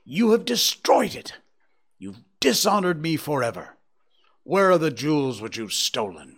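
loud, furious shouting, beside himself with rage. Narrator reading his own accusation of another man: shouting in rage. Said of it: "I shouted, beside myself with rage".

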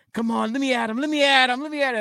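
high-pitched cartoon puppy voice, eager, itching to fight. Retelling how the cartoon character wants to fight: Scrappy-Doo voice. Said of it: "Scrappy Doo from Scooby-Doo, he's like".

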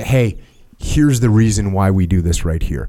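normal talking voice

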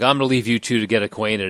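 ordinary delivery

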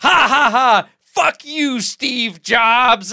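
high, loud gleeful yell.

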